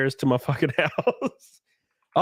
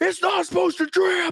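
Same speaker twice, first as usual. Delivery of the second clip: very high, indignant, freaked-out ranting outburst. Retelling how plumbers on Twitter reacted: imitating a freaked-out plumber. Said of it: "plumbers on my Twitter freaking the fuck out".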